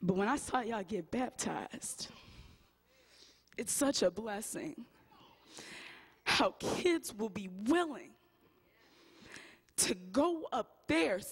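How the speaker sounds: holding back emotion, restrained. Speaking to the kids who got baptized, trying not to get emotional. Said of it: "I'm trying not to get emotional".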